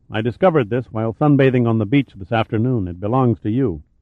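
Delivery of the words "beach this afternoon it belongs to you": ordinary delivery, nothing marked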